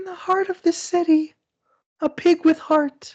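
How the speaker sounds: very high, shallow, airy, breathy wispy voice. Reading a movie tagline when asked for a shallow voice: high breathy voice. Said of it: "It's gotta be breathy".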